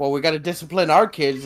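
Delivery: ordinary delivery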